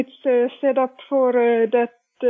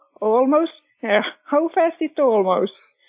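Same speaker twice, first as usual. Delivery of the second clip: plain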